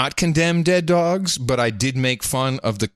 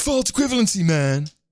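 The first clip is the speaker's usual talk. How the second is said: dumb put-on caricature voice; 6 semitones higher than usual. Arguing in a mock debate, playing a caricatured opponent: put-on libtard caricature voice. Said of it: "Do you like my libtard?".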